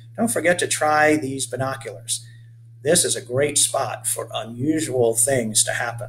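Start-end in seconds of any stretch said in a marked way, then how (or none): none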